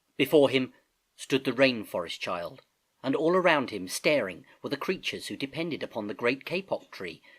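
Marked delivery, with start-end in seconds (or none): none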